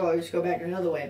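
ordinary talk

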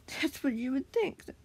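spoken through a little chuckle. Narrator reading the target's reply to a defiant challenger, with a chuckle. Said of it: "the target said with a chuckle".

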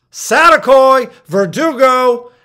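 mock shout, high, loud and slow.

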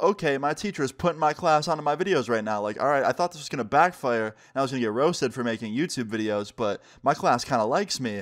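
ordinary talk, nothing marked

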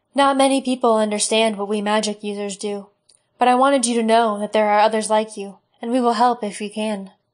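usual speaking voice

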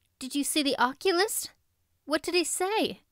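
anxious, pressing tone. Narrator reading a character's questions to a weary companion, anxious. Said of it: "asked Anne anxiously".

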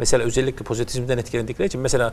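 fast, rushed, rattled-off delivery.

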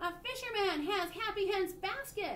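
very high, drawn-out yell. A friend calling to her from the back of a bike cart, shouting. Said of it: "he shouted".

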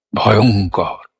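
stress on middle syllable ong. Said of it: "আবার বলি".

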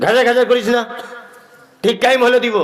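rude, snappy, curt tone.

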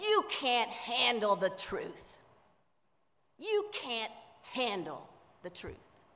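put-on loud, angry, disgruntled older man outburst. Retelling a famous movie line: angry Jack Nicholson impression. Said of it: "disgruntled, angry older gentleman, he says".

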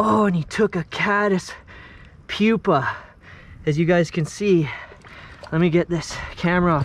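out of breath. Angler just after landing a big fish in a three-minute fight, out of breath. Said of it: "oh i'm out of breath".

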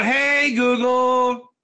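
called out loudly. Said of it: "I yell out".

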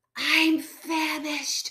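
whispering. Flo, a fox fleeing the farmyard with her family, whispering. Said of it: "whispered Flo".

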